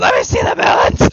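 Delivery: full-blast, very loud demanding scream. Retelling how another player screamed about melons: imitating someone screaming. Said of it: "You're screaming".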